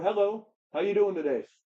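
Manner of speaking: kindly, warm, gentle tone. Showing how to greet a woman from a distance, a softer, warmer greeting. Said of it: "a little bit softer, a little bit warmer".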